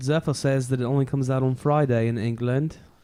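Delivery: clumsy, bad, put-on British accent. Relaying a comment during the podcast stream, in a bad British accent. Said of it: "Is that a bad British".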